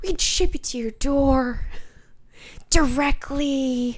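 slow, whispered celebrity impression voice.

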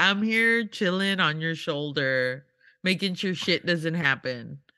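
ordinary delivery

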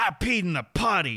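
put-on half angry, half excited tone, swooping pitch. The speaker quotes what he says after his success fist, imitating half angry, half super pumped. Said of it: "he says it like half angrily, half like super pumped".

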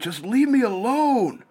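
acted, very high, drawn-out, stretched screaming. Retelling a man screaming as a woman follows him, retelling a man's screaming. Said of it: "He's screaming".

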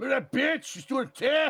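put-on loud, high, shrill Mexican accent. Retelling a movie outtake scene: imitating Michael J. Fox's Mexican accent. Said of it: "He's doing a Mexican a-, a-, accent".

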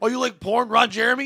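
put-on hollering. Imitating someone who quizzes wrestling fans, retelling a yell. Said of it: "You're yelling like".

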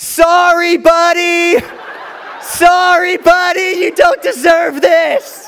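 tearful, very high screamed wail. Retelling a friend screaming tearfully at a wasp: imitating tearful screaming. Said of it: "with tears in her eyes, screaming to the bug".

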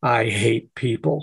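low, raspy, gravelly voice. Retelling what a former coworker said at a corporate event: imitating a gravelly voice. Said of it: "say in that gravelly voice".

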